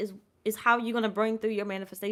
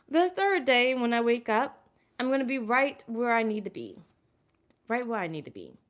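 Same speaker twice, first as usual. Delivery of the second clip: voice choking up, on the verge of tears. Speaker pauses a reading to repeat an affirmation, choking up, near tears. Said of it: "I am going to cry".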